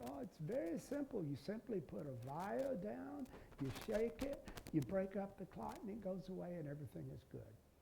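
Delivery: put-on heavy, soft German accent, laid on thick. Recalling a meeting, the speaker quotes a presenter from Germany, imitating Peter Rentrop's German accent. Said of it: "with a very thick German accent".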